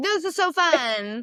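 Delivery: very slow fake cheerfulness. Retelling hiding yawns at a boring event: imitating own fake enthusiasm. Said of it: "hiding my yawns and being like".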